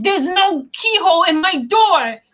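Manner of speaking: high, furious, bloody-murder scream. Retelling an angry line from a scene: imitating Martha screaming. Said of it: "screams it".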